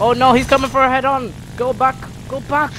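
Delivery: high, loud panicked yelling.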